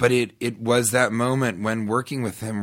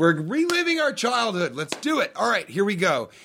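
very high, animated, swooping rallying yell; 10 semitones higher than usual. Retelling what the director would yell to the crew: imitating someone yelling. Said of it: "This is what he would yell to the crew".

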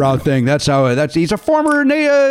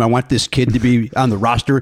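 usual speaking voice

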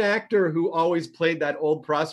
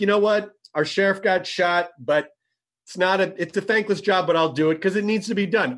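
normal talking voice

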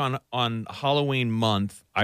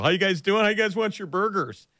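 pitch way up, very high-pitched dad voice; 10 semitones higher than usual. Retelling Will Ferrell's audition bit, a dad at a grill greeting guests: imitating Will Ferrell as a dad. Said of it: "He just acts like a dad".

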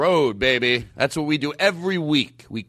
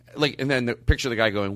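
ordinary talk

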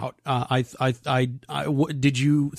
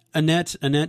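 usual speaking voice

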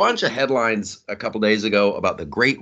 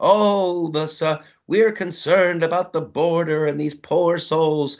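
fake, pitched-up concern with crocodile tears; 7 semitones higher than usual. Mocking people who claim concern about the border: mocking fake concern. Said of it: "Stop pretending".

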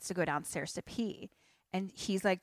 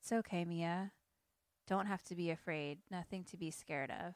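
put-on flat voice, much quieter; 8 dB quieter than usual. Recounting a scene where Grace approaches frightened kids, imitating Grace, emotionless. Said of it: "she's just like completely emotionless".

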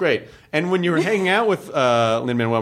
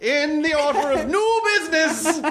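mock pompous official tone, higher; 13 semitones higher than usual. Making a grand announcement after being told not to make a speech: mock formal proclamation. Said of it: "make a whole speech about it".

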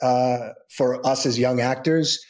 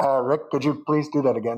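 put-on booming voice at a faster pace. Recalling the director calling down on the intercom, imitating Steve Wyman's booming voice. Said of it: "hearing this big booming voice".

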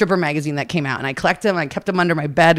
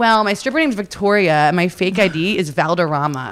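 normal talking voice

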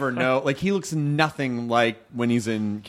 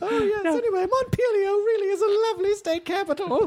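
put-on old lady voice, higher. Playing Emily as she answers Kumail: Emily as an old lady. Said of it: "I've turned her into an old lady now".

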